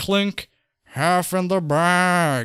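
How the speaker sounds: very slow drawl, "bag" stretched long. Comparing a creator's voice, imitating Mister Plinkett's voice. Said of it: "sounds a bit like fucking, um, Mister Plinkett".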